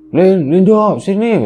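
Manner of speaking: high, shocked, startled scream. Retelling the moment a mother cracked a rotten egg and called out, retelling a scream. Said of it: "Ibu tuh sampai teriak".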